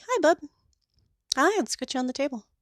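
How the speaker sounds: low-key friendly tone, not gushing. Showing how a groomer greets a dog on the table, friendly. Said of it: "to be friendly could be".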